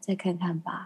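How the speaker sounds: put-on breathy, airy voice. Retelling a mom's answer to an invitation: imitating mom's breathy voice. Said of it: "她都用气音欸".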